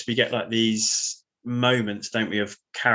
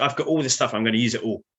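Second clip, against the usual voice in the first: ordinary delivery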